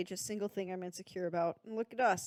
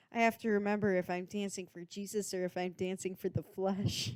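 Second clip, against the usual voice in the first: ordinary talk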